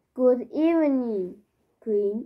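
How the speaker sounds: ordinary delivery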